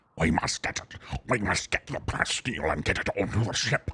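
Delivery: little pig-man creature voice. Playing a game, speaker voices a pig man character in a pig man voice. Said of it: "That's my pig man voice".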